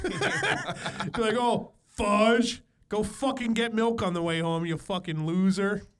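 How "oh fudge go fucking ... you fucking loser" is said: put-on, mocking, completely sarcastic tone. Act out someone making fun of you, imitating someone completely sarcastic. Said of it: "like completely sarcastic, like like to make fun of me".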